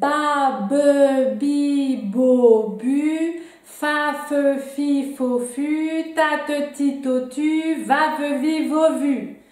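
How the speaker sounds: very slow, almost slow-motion syllables. Leading a syllable drill with the audience, first round almost in slow motion. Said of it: "presque au ralenti".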